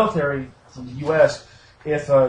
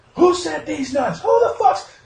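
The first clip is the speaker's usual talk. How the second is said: put-on drill sergeant scream, higher; 13 semitones higher than usual. Retelling how a drill sergeant screamed at a platoon: imitating drill sergeant screaming. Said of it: "screaming at him".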